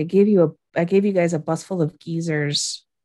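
put-on muttering under breath. Retelling what an applicant said to those behind her, muttering under breath. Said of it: "under her breath says something like".

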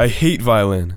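mock angry, frustrated shout at the top of lungs. Reading aloud a story about failing at violin practice: retelling a yell at the top of one's voice. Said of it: "I yelled at the top of my voice".

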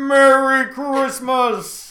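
very loud, high American voice, "merry" drawn out. Asked to do his character's voice, he tries it in American Holiday Armadillo voice. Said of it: "I find he comes out American".

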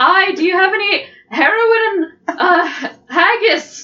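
mock Scottish accent, high-pitched, laughing.

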